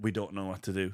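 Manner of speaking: plain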